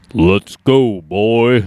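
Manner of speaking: low, deep, attempted game-character voice. Trying a voice from the game and giving up: attempted Kratos voice. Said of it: "I can't do the voice out here".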